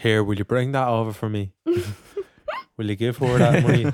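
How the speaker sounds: lovely lilting Dublin accent, swooping throughout. Chatting in a group, the speaker puts on a lovely dublin accent. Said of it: "That's [name] doing a lovely Dublin accent".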